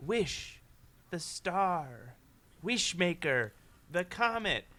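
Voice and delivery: creepy, eerie, spooky put-on voice. Describing a voice a boy hears in his head, put-on creepy voice. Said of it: "this creepy voice that's like".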